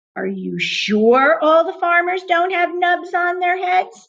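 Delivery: eerie, high, spooky ghost-story voice. Narrator reads Jim's question in a story, in a spooky voice. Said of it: "He said in a kind of spooky voice".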